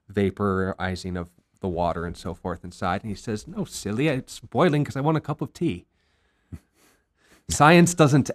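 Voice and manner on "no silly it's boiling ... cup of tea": put-on Scottish accent, pitched up. Speaker quoting a man's reply in a story, scottish accent. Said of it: "I'll stop with the Scottish accent".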